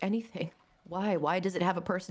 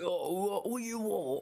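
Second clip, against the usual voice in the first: put-on voice, very slow, every word drawn out. Doing a bit about Peaky Blinders: imitating Peaky Blinders talk. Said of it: "They all talk like that".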